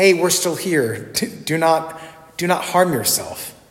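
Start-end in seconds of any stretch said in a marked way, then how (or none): none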